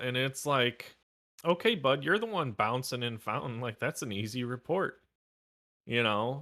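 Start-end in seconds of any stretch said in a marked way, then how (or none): none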